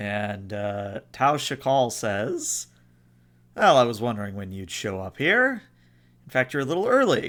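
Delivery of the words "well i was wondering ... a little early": admiral voice, swooping and animated. Voicing an Andorian who speaks to the players: Fleet Admiral's voice. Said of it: "speaks in a very familiar voice, uh, the voice of the Fleet Admiral".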